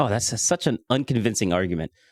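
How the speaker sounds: ordinary delivery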